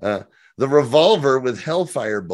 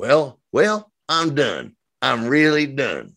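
put-on Southern accent; 2 semitones higher than usual. Reading out a comment as its writer Garabedian: Southern accent as Garabedian. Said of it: "it's always been a Southern accent for Garabedian".

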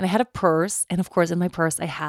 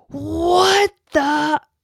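very high, shrill screeching yell with "what" drawn out; 11 semitones higher, 6 dB louder than usual. Retelling hearing someone yell from the top of the house: retelling someone yelling. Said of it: "someone yelling".

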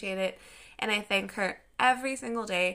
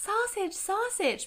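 put-on tiny, cute little-kid voice, very high-pitched; 12 semitones higher than usual. Retelling asking grandparents for food at a restaurant as a child, cute little baby voice. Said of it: "I had this like cute little baby voice".

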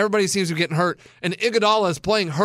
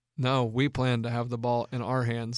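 mock-deadpan, lower and quieter; 7 semitones lower, 8 dB quieter than usual. Retelling a man's answer to a question, the speaker imitates his deadpan reply. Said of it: "I loved his just deadpan".

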